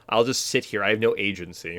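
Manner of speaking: ordinary talk, nothing marked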